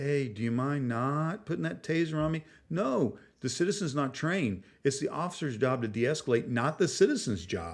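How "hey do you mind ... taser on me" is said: easy, calm, polite, de-escalating tone. Acting out a citizen trying to de-escalate with an officer, super slow and calm. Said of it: "start talking super slow and calm".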